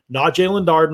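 ordinary talk

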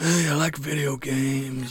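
mock slow, soft, dead-voiced monotone drone.

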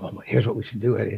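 barely-there, hushed, quiet half-whisper. Retelling how a very quiet colleague spoke: imitating someone half-whispering. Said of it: "he'd be whispering".

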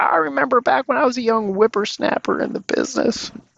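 put-on very high-pitched old-timer voice. Imitating how the listeners will sound reminiscing years from now, as a future old-timer. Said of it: "That's my impression of what you'll sound like".

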